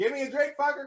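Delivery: put-on very high-pitched, shrill yell. Imitating someone yelling for a drink: imitating someone yelling. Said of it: "she will yell".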